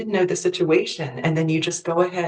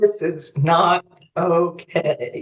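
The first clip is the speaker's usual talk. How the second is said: very slow, every word stretched out. Asked to say it again, Dad repeats the phrase very slow. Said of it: "I want you to say it really slow like that".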